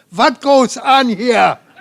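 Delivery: very loud, high-pitched, bad put-on German accent. Retelling a man running up to the gathered group, in a bad german accent. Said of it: "he has this bad German accent".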